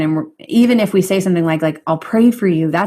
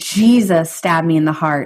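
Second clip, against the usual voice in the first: ordinary talk, nothing marked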